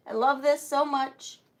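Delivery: ordinary delivery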